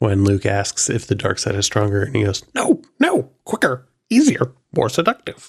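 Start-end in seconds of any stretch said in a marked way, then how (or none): 2.5-5.5 put-on little alien voice. Quoting the dark side line to another speaker: Yoda voice. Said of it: "you're a great Yoda".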